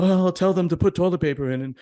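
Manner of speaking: put-on jittery child voice. Retelling what a nervous eighteen-year-old said about toilet paper: imitating a nervous kid. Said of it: "so nervous".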